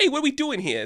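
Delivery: put-on whiny voice, very high. Describing a comedy duo's characters, showing one: imitating a whiny voice. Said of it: "a guy with a whiny voice like this".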